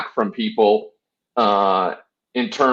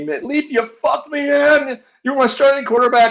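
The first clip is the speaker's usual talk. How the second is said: play-acted, high-pitched screaming. Recalling a man screaming at him for being his fantasy quarterback: imitating someone screaming. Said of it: "he's like screaming at me".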